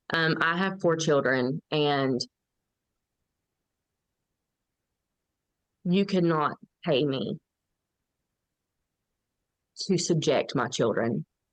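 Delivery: slow, choked-up voice, thick with emotion, near tears. Speaking about her own children after saying it makes her emotional: emotional, choking up. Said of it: "Sorry, makes me a little emotional".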